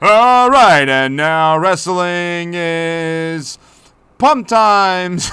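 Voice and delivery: very loud, very slow, drawn-out booming ring announcer bellow. Acting out how a man goes in there and announces the wrestling, imitating a wrestling ring announcer. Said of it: "he's like a real ring announcer".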